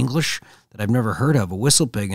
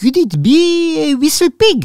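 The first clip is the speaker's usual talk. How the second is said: put-on very high, very loud, heavy, thick French accent; 8 dB louder than usual. Retelling a man who stopped inches from his face on a trail; high-pitched thick French accent. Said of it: "says in the most high pitched, thick French accent".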